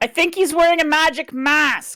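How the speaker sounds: very high, loud shouting. Playing a character reacting to a blocked spell: character yelling. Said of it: "she yells out".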